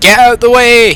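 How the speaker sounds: loud high-pitched shout.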